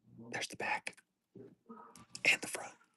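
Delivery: quiet, hushed whisper. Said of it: "I'll whisper".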